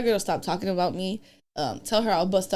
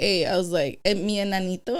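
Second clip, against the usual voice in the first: ordinary talk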